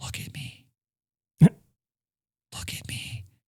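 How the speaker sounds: drawn-out, slow, soft, breathy whisper. Retelling a wedding scene, the woman at the altar speaks to him: whispering. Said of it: "And she whispers".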